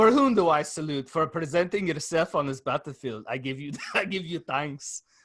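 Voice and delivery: Scottish brogue, movie-warrior style. Quoting another line from Braveheart: Scottish accent from Braveheart. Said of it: "That's a good accent".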